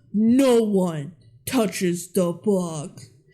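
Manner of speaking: deep, menacing, scary voice, very slow. Describing a scene, speaker retells the dad's line in a deep, scary voice. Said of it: "in like a really deep, scary voice".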